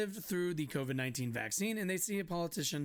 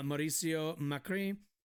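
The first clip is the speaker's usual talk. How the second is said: put-on French accent. Reading a news article aloud, saying a name in a French accent. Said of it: "with a fucking French accent".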